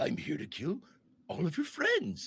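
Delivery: earnest, plain, dead-sincere delivery. Voicing Pennywise answering, with no sarcasm: honest, earnest Pennywise voice. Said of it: "no sarcasm at all in the statement".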